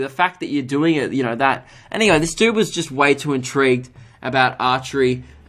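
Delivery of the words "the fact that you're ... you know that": normal talking voice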